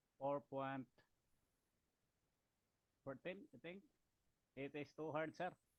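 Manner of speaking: barely audible, very quiet, faint delivery. Answering a call for questions, words hard to hear: faint voice. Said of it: "your voice is a little faint".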